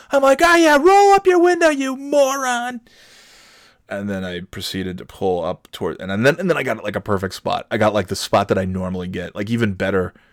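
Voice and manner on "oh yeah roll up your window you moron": very high, shrill screaming yell. Retelling yelling as the other driver rolled up his window: imitating own past screaming. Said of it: "I'm still sc-".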